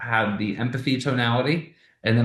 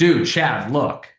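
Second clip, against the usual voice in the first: slightly raised, abrupt, a little louder; 4 dB louder than usual. Demonstrating a pattern interrupt, cutting someone off a little louder. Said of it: "I was a little bit louder with my tonality".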